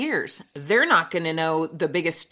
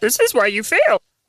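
higher, louder, puppet-like put-on little alien voice; 3 semitones higher, 7 dB louder than usual. Doing a requested Yoda bit, very Muppety: Yoda voice. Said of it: "it's very Muppety".

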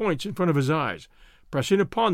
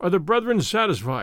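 usual speaking voice

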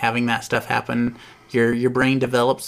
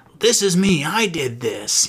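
mock, drawn-out, sing-song, excited bragging tone; 4 semitones higher than usual. Retelling what a man said, slapping down the next day's newspaper, acting out excited bragging. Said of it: "like all excited".

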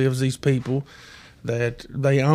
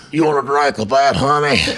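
put-on toothless heavy smoker's voice; 3 dB louder than usual. Retelling what a toothless woman asked him about a drink; imitating a heavy smoker's voice. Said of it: "She sounded like she smoked Prince Albert through a paper bag".

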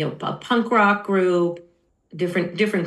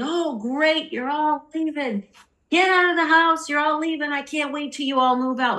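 mock, very high, laughing through the words; 10 semitones higher than usual. Telling a childhood story, the speaker imitates their dad laughing in the hallway. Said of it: "And my dad was standing in the hallway laughing".

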